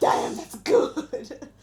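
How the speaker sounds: hammy, loud, dramatic, over-the-top savoring delight. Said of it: "Wow. Go on. Dramatic".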